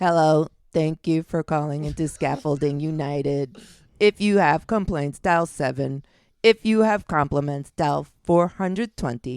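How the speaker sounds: robotic, automated phone menu voice. Voicing the phone line of a scaffolding company: robot voice. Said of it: "a robot voice answers the phone".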